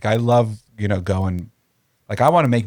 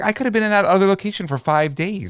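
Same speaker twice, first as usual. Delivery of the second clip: put-on freaking out, higher; 11 semitones higher than usual. Retelling a video where others say they must move: imitating David Lynch flipping out. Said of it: "he's flipping out".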